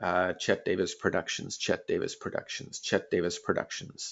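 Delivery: low, soft, toneless murmur.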